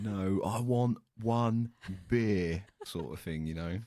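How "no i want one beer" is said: put-on loud, very slow, overly spelled-out speech. Imitating a british tourist ordering abroad: loud, slow british tourist speech. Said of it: "if you just say it louder and slower".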